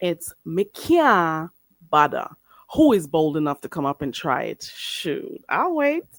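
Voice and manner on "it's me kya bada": Jamaican patois accent with kya stretched long. Teaching how to say "I can't be bothered": Jamaican patois pronunciation. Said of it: "we don't really say it like that".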